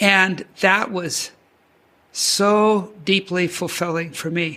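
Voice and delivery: slow, choked-up voice, emotion catching in the throat. Recalling watching the Oscars at home, getting a little choked up. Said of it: "I'm getting a little choked up".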